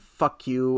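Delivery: ordinary talk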